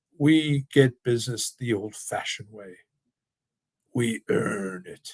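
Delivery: put-on snuffly, slow, stodgy, old-fashioned English accent. Quoting a line from his commercials, in a stodgy old English accent. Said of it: "in this old English accent, sort of stodgy, a little snuffly".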